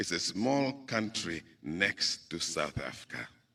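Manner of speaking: very soft, quiet, low, modest, humble voice. Recalling how a man from Southwest Africa answered questions: retelling in a humble voice. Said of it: "he would say in a very humble voice".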